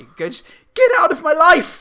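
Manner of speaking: very high-pitched, very loud middle-class shriek. Retelling their own comeback to someone, high-pitched middle-class voice. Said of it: "in a very high-pitched middle-class way".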